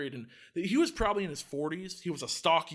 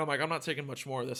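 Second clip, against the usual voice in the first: ordinary talk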